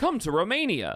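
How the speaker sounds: acted robot voice, like a programmed robot. Retelling a call on a stream, as Andrew Tate acting like a robot. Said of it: "acting like a robot".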